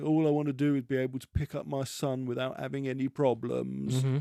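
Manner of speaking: mock tearful crying with sniffling. Speaker retells a man's line from an episode's opening, imitating someone sniffling and crying. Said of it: "they've got him sniffling and crying".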